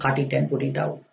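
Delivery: ordinary delivery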